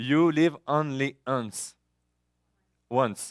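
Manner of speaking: slow, very drawn-out put-on English accent. Explaining the expression YOLO to an audience, saying it in an English accent. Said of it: "je vais le dire avec mon accent anglais".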